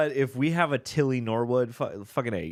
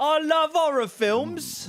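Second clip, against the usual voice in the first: very high-pitched put-on British accent. Asked to read it all again, the speaker uses a british accent. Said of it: "read that all again now in a British accent".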